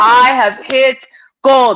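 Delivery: ordinary delivery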